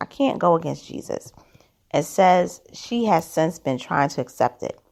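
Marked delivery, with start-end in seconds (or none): none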